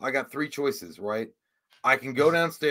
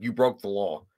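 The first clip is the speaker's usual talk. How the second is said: put-on robotic voice, lower; 5 semitones lower than usual. Retelling walking into the bedroom like RoboCop: RoboCop voice. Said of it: "I said it as a matter of fact".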